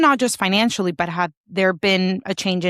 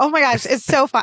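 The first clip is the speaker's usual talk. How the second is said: high, thrilled, gushing, excited delight; 6 semitones higher than usual. Picturing their boats side by side, the speaker gets excited. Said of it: "I'm getting so excited".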